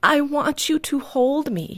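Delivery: put-on tearful child voice, slow and sniffly. Retelling a toddler reaching out with open hands: imitating a sniffling child.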